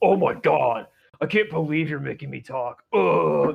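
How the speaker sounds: slow, annoyed, put-upon whining voice. Mocking players who complain at a sound check: imitating whiny annoyed complaining. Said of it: "They get so butthurt".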